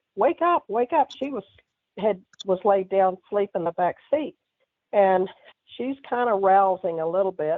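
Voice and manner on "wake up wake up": screamed, high-pitched and urgent. Driving, recounting screaming at their sleeping daughter in the back seat. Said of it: "screaming at my daughter".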